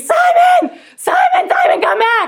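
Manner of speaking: shrill, very high screaming at full volume. Retelling calling her runaway dog simon back: retelling a scream. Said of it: "So I start screaming".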